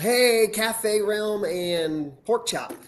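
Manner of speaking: play-acted loud, high shout. Retelling how someone went live and shouted out names: imitating someone shouting. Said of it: "he shouted out, he goes".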